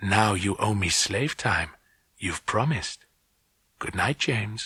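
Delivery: half-whispered in quiet, hushed triumph. Reading a story aloud, the girl claiming a promise: triumphant half-whisper. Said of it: "The voice whispered triumphantly".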